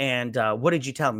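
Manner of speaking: ordinary talk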